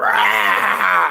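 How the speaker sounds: very low, deep growl on rah. Describing how they growl with a deep voice: deep growl on rah. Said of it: "You know how they growl".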